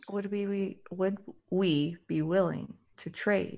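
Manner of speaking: hushed whisper. Whispering a question to the group. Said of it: "I'm whispering".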